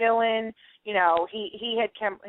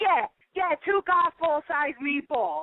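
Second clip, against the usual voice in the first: acted, smug, cocky sarcasm with swooping pitch; 7 semitones higher than usual. Recalling being filmed making meatballs, the speaker replays their own reply: retold cocky sarcasm. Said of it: "cocky and sarcastic".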